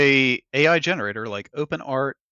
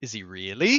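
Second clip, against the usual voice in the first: put-on keenly curious, childlike tone; 2 semitones lower than usual. Retelling what a kid asked his mom, imitating an interested kid. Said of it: "Not like upset, but like interested".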